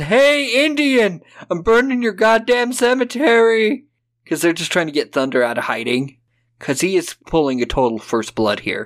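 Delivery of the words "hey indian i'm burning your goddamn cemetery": mock, very high, goading, drawn-out holler. Retelling a film scene where a cop yells at someone: shouting a quoted line. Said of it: "And he just shouts".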